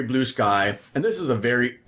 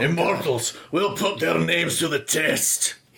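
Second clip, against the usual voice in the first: put-on Scottish accent, higher pitch; 5 semitones higher than usual. Discussing the film 300, a speaker does a Gerard Butler Spartan voice. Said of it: "That was really Scottish".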